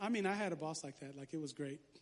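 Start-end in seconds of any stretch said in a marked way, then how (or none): 1.2-1.8 low, quiet, dry sarcastic aside. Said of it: "I'm being sarcastic".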